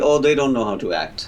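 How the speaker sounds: ordinary delivery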